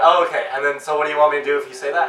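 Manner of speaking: ordinary delivery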